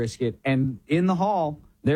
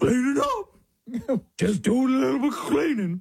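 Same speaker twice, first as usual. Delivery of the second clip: high, pitched-up cartoon-dog voice; 8 semitones higher than usual. Retelling answering a question while picking up toys: Scooby-Doo dog voice. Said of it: "answer them in a dog voice".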